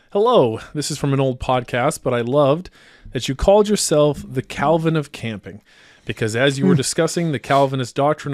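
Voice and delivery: ordinary talk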